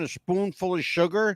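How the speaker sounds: usual speaking voice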